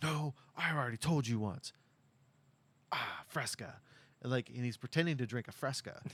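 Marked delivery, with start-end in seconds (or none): 0.0-3.7 slow, deliberate actor's line reading. Retelling a scene where a driver rehearses audition lines: imitating an actor reading audition lines. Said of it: "reads a line".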